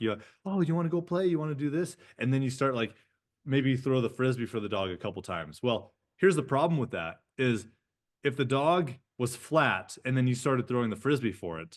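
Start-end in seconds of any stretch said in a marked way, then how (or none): 0.5-2.0 put-on sugary, high-pitched baby voice. Showing how an owner sweet-talks a dog; baby talk to a dog. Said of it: "the baby talk".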